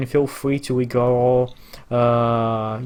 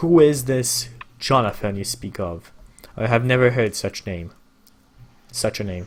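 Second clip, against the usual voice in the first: put-on kindly, grandfatherly voice with commanding, imposing presence. Voicing a king greeting travelers: grandfatherly yet imposing voice. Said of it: "grandfatherly voice".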